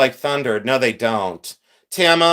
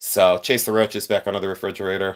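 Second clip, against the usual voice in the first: ordinary delivery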